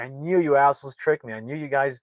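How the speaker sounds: play-acted angry, yelling outburst. Retelling a man who starts yelling at another man: retelling a yell. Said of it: "he starts yelling at D J".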